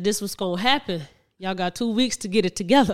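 normal talking voice

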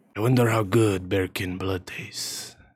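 mumbled muttering under breath. Narrating, a character mutters while walking past the listener: mumbling. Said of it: "You could hear him mumbling as he walks past you".

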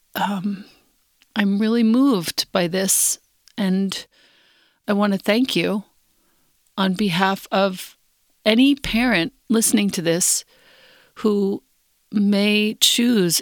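trembling, shaky, halting voice, choked with tears. Thanking someone on behalf of parents who are listening: shaky, teary voice. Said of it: "With a shaky voice and tears in my eyes".

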